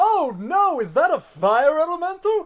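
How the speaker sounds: very loud, high, booming, bold heroic shout. Playing a bard shouting a false warning from nowhere: deep heroic bold shout. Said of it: "very deep, heroic, bold voice out of nowhere shout".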